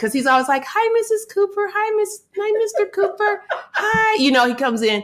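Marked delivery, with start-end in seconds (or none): 0.6-4.2 very high, tiny, squeaky voice. Describing Jordan's thirteen-year-old friend greeting her, imitating Fanon's tiny voice. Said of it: "he has a little tiny voice".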